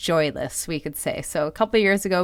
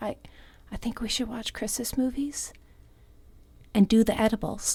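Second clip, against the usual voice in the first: lowered, hushed, sneaky voice; 4 semitones higher, 7 dB quieter than usual. Speaker retells her mom's words, imitating mom lowering her voice. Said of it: "like lowers her voice".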